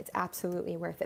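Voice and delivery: ordinary talk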